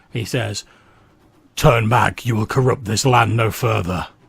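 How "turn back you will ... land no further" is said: loud, rocky, gravelly, creaking rumble. The narrator voices a figure levelling a weapon at you, in a gravelly voice like tumbling rocks. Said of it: "in a gravelly voice that sounds like the tumbling of rocks".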